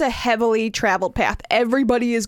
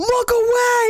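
put-on, very high-pitched shrieking, screaming yell; 14 semitones higher, 4 dB louder than usual. Recounting shouting at three people staring at him, retelling a scream. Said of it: "I'm screaming at them".

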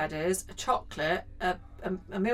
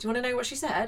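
ordinary talk

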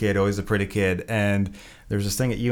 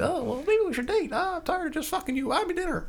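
put-on very high, hushed, soft girl voice; 5 dB quieter than usual. Describing the fights other girls would start, doing an impression of a girl. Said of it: "That's my best impression".

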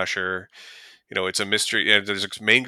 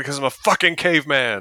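put-on, high-pitched, loud yelling; 5 semitones higher, 4 dB louder than usual. Retelling a film scene where a man answers a screaming woman, retelling a yell. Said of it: "And he yells back".

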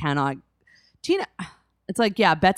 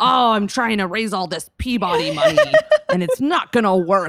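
put-on pirate voice, higher and louder; 6 semitones higher, 5 dB louder than usual. Retelling how Bet talks over Tina: imitating Bet as a pirate. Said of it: "Also, she's a pirate, I guess".

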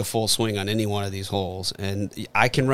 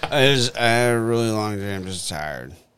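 put-on drunk voice, slurred words. Acting out a drunk person coming home, on a co-host's cue: slurring drunk voice. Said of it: "Start drunk. Slurring".

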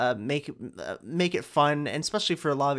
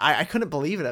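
ordinary talk, nothing marked

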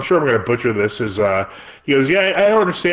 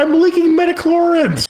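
put-on exaggerated crying voice, pitched way up; 3 dB louder than usual. Mocking someone in a made-up scene: mock crying. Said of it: "he just starts crying, going".

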